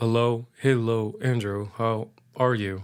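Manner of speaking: flat robot-like voice. Showing how a voice trained on their recordings might sound: robotic monotone voice. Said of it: "Imagine me talking like this".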